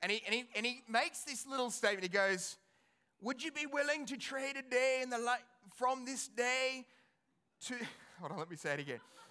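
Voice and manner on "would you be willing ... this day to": poor, bad fake Scottish accent. Quoting a man riding his horse back and forth, in a bad Scottish accent. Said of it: "please forgive my bad Scottish accent".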